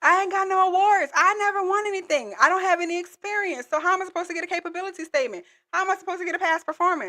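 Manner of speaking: mock whine, high-pitched and fast.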